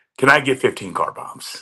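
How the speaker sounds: play-acted, sly, cheeky, knowing tone in fun. Retelling what she asked with a big grin on her face, imitating a grinning request. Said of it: "it's that like shit eating grin smile".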